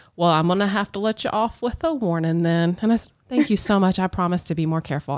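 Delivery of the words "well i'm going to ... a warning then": put-on Southern accent. Retelling what the officer who pulled the speaker over said, in a put-on southern accent. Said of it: "had the Southern accent".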